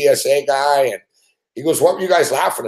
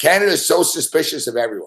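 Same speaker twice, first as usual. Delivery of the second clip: normal talking voice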